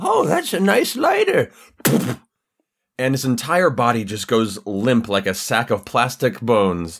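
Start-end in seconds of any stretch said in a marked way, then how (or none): 0.0-1.5 tiny, very high, squeaky sing-song voice. Describing a game scene, the speaker voices a line: tiny little voice. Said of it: "this tiny little voice go".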